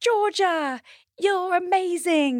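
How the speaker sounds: very high-pitched, badly done put-on voice. Recalling what she said to the audience, Florence impersonation. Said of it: "This is my terrible Florence impersonation".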